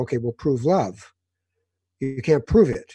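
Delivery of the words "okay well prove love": usual speaking voice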